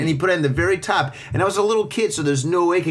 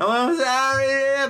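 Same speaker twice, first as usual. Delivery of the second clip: mock, very high, tearful crying voice; 9 semitones higher than usual. Speaker retells apologizing at the hardware store as a kid, retelling a crying apology. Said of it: "I'm crying".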